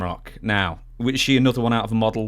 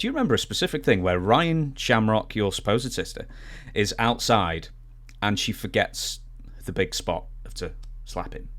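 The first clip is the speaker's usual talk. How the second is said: normal talking voice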